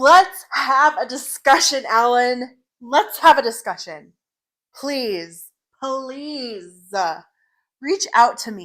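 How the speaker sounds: high, agitated, insistent, worked-up delivery. Speaker daring an accuser to share their data and reach out, worked up. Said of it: "I'm really worked up today".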